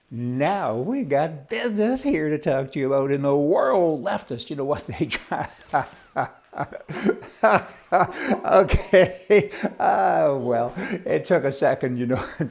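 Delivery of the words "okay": loud, laughing voice. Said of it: "Try not to laugh".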